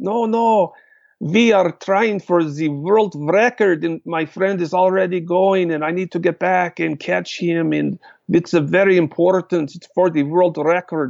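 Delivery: put-on Czech accent, switched on at will. Retelling how Joe answered a policeman after being pulled over, Joe's Czech accent. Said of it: "Joe goes right into his Czech accent".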